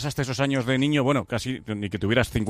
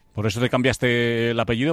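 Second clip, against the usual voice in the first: ordinary talk, nothing marked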